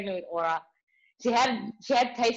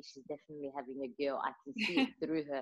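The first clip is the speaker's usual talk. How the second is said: very quiet, soft, confiding half-whisper; 7 semitones lower, 11 dB quieter than usual. Retelling what mom half-whispered about a friend's pregnancy: imitating mom half-whispering. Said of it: "She whispers to me".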